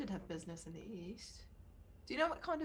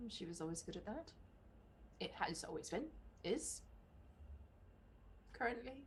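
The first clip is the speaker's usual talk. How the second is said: slow, increasingly worried tone; 7 dB quieter than usual. Speaking in character about her good direction, sounding worried. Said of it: "you were all jovial and then you kinda got worried".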